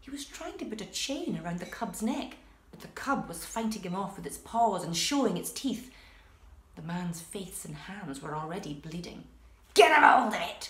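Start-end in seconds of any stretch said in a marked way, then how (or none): 9.7-10.7 very loud, snarling voice. A man struggling to chain a cub calls to the other man; snarling. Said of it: "he snarled at the other man".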